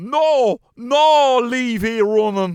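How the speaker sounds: put-on Irish Donegal accent. Retelling how she flipped the lid at the lads, answer them in a big Donegal accent. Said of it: "gave us in a big Donegal".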